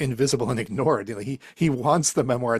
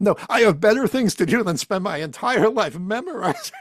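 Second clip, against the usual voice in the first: over-the-top, high-pitched, furious, overreacting angry yell; 9 semitones higher, 4 dB louder than usual. Act out the film scene where he overreacts to a bank clerk, imitating Malkovich yelling in anger. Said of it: "when he's yelling at the person on the bank".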